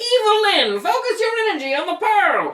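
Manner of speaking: very high, shrill villain voice. Retelling a cartoon story, acting as Skeletor giving an order. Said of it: "he's like".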